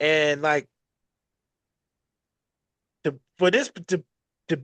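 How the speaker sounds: stuttering, stammering, repeated false starts. Speaker discussing the Triple A title, stuttering. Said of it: "I'm stuttering right now".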